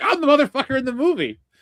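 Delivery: shrill, high, loud, pissed-off indignant rant. Imagining losing a cartoon role to someone else: pretend pissed off. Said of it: "I'd have been pissed".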